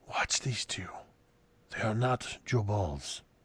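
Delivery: very soft, hushed whisper. Game narrator voicing Volo leaning over to whisper to Vale, Volo whispering. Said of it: "He whispers to you".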